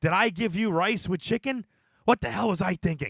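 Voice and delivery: very loud, high, shrill, screechy put-on character voice. Doing another impression when asked: Peter Falk impression sounding like Gilbert Gottfried. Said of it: "Go ahead, do another one".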